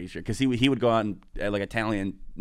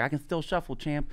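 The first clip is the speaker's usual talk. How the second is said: put-on high, eager, proud little-kid voice, pitched up; 7 semitones higher than usual. Retelling a video of Mike Tyson meeting his hero: imitating Mike Tyson. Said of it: "He's like".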